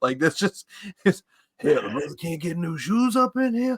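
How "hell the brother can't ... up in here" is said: action-movie tough-guy voice with street-talk affectation. Explaining how an actor talks in his movies now: Steven Seagal movie voice. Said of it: "That's how Steven Seagal talks in his movies".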